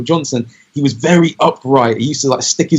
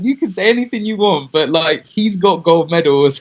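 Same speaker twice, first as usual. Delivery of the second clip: usual speaking voice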